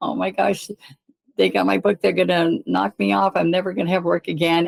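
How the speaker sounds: mock talking through tears, tearful crying. Retelling calling the husband from a ladder, imitating own past crying. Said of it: "I was on the ladder and I'm crying".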